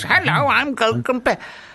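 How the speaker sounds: put-on high, slow robotic voice. Retelling a disliked advert with a robot in it: imitating a robot voice. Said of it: "it's like a robot, and it goes".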